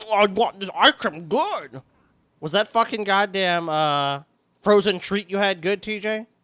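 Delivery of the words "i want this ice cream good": words pushed out through a mouthful of food. Speaker does a voice after being told to talk with food in mouth, TJ voice, mouth full of food. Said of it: "shove some food out of your mouth and then try to talk".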